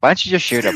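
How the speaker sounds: loud theatrical whisper. Retelling how Johnny, playing Joker, whispers in the ear: imitating Johnny whispering. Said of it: "he's whispering in my ear going like".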